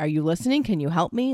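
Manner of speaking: put-on irritated tone. Showing the listener how the speaker asks the question, mock-irritated question. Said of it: "I ask the question with an irritated voice".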